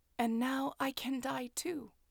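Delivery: hushed, quiet murmur. With a blade in her chest, the narrator murmurs. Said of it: "I murmured".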